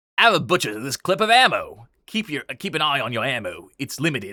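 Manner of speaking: put-on cockney pirate accent. Trying out a voice while talking about a film clip, attempting a Cockney pirate accent. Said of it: "a Cockney pirate".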